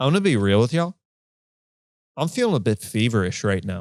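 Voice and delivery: dead serious deadpan delivery, no wink. Retelling what a man told the audience at a club, retelling a deadpan line. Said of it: "looks deadpan into the audience and goes".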